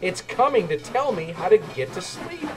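peeping happily. A narrator reads a little engine spotting a distant light, happy peep. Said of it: "he peeped happily".

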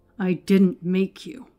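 said through tightly clenched, gritted teeth. Narrator reads a man answering a sneering questioner, through clenched teeth. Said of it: "Edgar gritted through clenched teeth".

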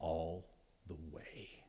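very hushed, very low, very quiet whisper. Speaker imagines Jesus hugging the listener and speaking into their ear; whispered. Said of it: "he whispers in your ear".

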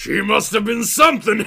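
loud, wicked guffawing laugh through the words. Narrator reads a man replying to another man, wicked guffaw. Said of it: "Stevens guffawed wickedly".

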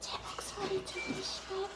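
gentle ASMR-style whisper.

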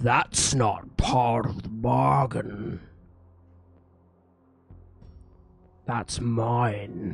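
big deep booming voice. As the orb is lifted, a voice rings out in everyone's minds: deep booming voice. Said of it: "in a deep booming voice".

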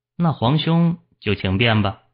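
ordinary delivery

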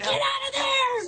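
play-acted crazy frantic yelling, very high pitched. Talking to the person from a YouTube shark video: mock yelling like crazy. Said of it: "You were just yelling like crazy".

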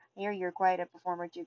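ordinary delivery

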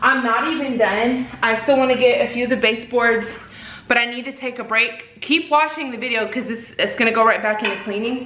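winded, panting, breathless and rushed. Taking a break from hard cleaning while filming a video, out of breath. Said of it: "But I'm out of breath".

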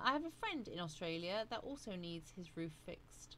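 ordinary delivery

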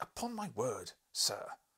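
affronted angry voice. A narrator replies to an insolent man who doubts his honour: angry. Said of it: "I said angrily".

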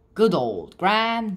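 usual speaking voice

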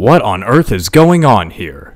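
severe, stern, very loud booming voice. The town's mayor calls out from behind Belina on the courthouse steps: stern. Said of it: "a stern voice called out from behind her".

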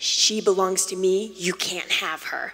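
dark, deep possessing-demon voice. Retelling what a voice said during a prayer, in a deep voice. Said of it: "this deep voice looked me dead in the eyes and said".

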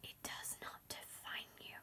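soft, hushed whisper. Repeating the line about the piece of paper, whispered. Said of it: "for some reason it felt right to whisper that".

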